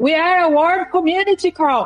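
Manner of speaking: loud, high-pitched telling-off. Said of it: "Ela começa a gritar com ele".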